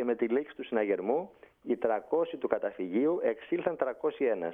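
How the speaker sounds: usual speaking voice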